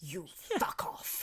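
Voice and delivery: breathy, whispered delivery. Doing the impression again on request: Judi Dench impression. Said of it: "I'd quite like you to do it again".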